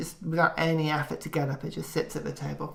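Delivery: ordinary talk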